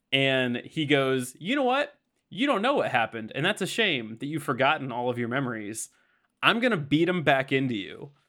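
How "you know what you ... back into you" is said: put-on gloating, smug, superior, swooping villain voice. Retelling a fight scene where Reverse Flash answers Barry: smug Reverse Flash voice. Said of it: "He's so smug".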